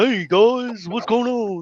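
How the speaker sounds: very high-pitched cartoon crab character voice. Describing someone who reminds you of a cartoon crab, imitating Kenny's voice. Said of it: "If you hear his voice".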